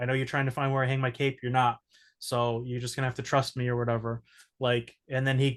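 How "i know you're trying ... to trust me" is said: plain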